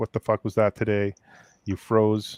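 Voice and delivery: ordinary delivery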